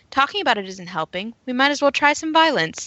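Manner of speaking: put-on, tongue-in-cheek sarcasm. Recounting a show scene, speaker quotes a character's reply: retelling a sarcastic suggestion. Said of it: "I was being sarcastic".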